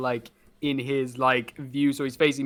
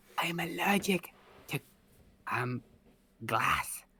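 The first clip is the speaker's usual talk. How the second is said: soft, hushed whisper, close in; 4 semitones higher, 8 dB quieter than usual. Whispering in his ear while snipping his mutton chop: whispering in his ear. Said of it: "start snipping the mutton chop as I'm whispering in his ear".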